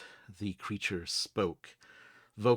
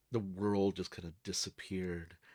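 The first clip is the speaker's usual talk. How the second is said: ordinary talk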